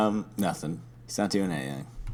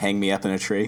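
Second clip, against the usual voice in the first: plain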